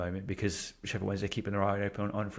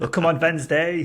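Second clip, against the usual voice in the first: shouting in a put-on German accent; 8 semitones higher, 10 dB louder than usual. Joking about a simple explanation, imitate Timo Werner shouting with a German accent. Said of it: "That's my German accent".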